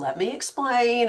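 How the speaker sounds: soft teacher-like voice. Imitating Jen guiding the speaker through a Facebook ad task, soft teacher voice. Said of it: "her like soft like teacher voice".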